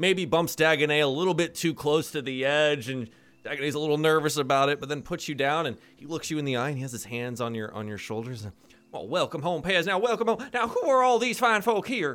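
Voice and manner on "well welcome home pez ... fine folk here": raised cartoon character voice. Voicing a father greeting his daughter's friends: Foghorn Leghorn voice. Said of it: "It's your dead foghorn leghorn".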